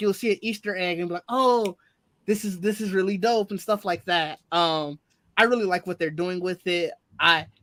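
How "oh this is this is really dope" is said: ordinary talk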